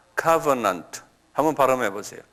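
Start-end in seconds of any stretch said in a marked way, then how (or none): 0.2-1.0 covenant with stress on first syllable co-. Teaching the english word covenant, stress on first syllable of covenant. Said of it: "액센트가 앞에 있어요".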